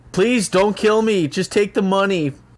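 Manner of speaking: high, shouted, pleading, acted in character. Acting out a staged robbery for the others: yelling a plea in character. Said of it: "I'm gonna yell out".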